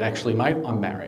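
normal talking voice

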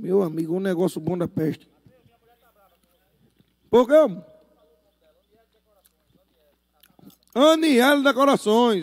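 speaking with a mouth full of food. Eating at a barbecue, shouting out the buffet and decorators, talking with mouth full. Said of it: "Eu falo de boca cheia".

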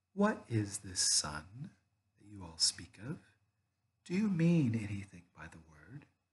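soft, hushed cooing like a wood pigeon. Narrator reads the witch asking the others a question, in a soft cooing voice. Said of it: "cooing softly the voice of a wood pigeon".

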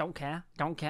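light put-on Manchester Mancunian accent. Explaining a meme from when the speaker was younger, repeating it in a little Mancunian accent. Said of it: "doing like this little Mancunian accent".

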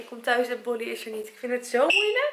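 tearful voice, close to crying. Coming home to find Bolly gone, speaking close to tears. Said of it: "ik kan wel janken".

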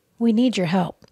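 ordinary delivery

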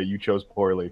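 calmly spoken. Player speaking in Aquan to enemies as they leave, before striking: very calm. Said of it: "very calmly say".

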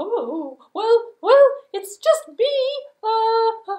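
very high-pitched goat voice. Telling a story, speaking as the middle-sized goat, in a middle Billy Goat Gruff voice. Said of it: "the middle-sized Billy Goat Gruff decided that she".

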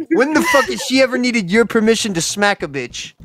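so furious words barely come out, high, flustered outburst. Ranting to the others, furious to the point of barely being able to talk. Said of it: "I'm so fucking mad I can't talk".

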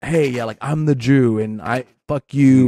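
normal talking voice

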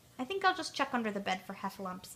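plain reading voice

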